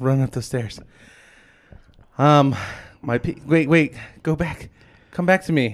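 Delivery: winded, breathless panting. Welcomed back on the show, still out of breath. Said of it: "I'm out of breath still".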